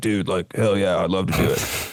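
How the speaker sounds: deep, low-set dude voice. Retelling a friend's eager yes to a guest spot: imitating Ben's deep voice. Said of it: "This is also how Ben talks".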